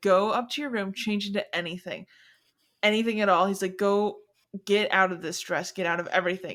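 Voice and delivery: ordinary talk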